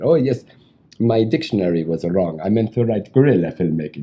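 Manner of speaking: put-on heavy, thickly laid-on Hungarian accent. Retelling what a Hungarian director said on the phone: thick Hungarian accent. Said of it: "this guy with this thick Hungarian accent".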